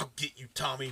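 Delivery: mock muttering. Retelling a movie scene where the boyfriend threatens Tommy: imitating muttering to himself. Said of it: "muttering to himself".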